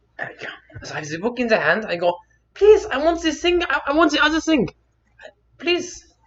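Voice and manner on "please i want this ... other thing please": very high-pitched, loud, put-on German accent. Retelling asking for things as a child: German accent. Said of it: "I guess I'm going to German today".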